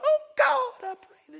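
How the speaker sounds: put-on very high-pitched, loud little boy voice. Retelling how a boy under sixteen prays in the men's prayer room, high-pitched voice. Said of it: "in a high-pitched voice".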